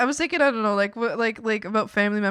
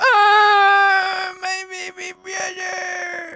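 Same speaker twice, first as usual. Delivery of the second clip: fake sobbing, higher and louder; 10 semitones higher, 7 dB louder than usual. Acting out own imagined words to a brother, mock crying. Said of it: "and I'd be crying there".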